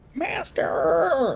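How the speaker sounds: very high, soft, gobbling creature voice. Game master voicing a figure as it runs past the players: gobbly voice. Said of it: "in this gobbly voice".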